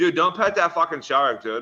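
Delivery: loud shout. Imagining what they would yell if they were on the boat, imitating a loud shout. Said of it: "you would just hear my voice real loud".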